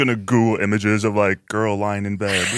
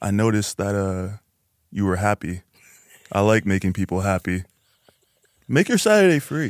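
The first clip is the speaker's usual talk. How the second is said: playful, flirty, inviting tone. Trying out a line after being asked to say it in a flirty tone. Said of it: "Let me try saying it in a flirty tone".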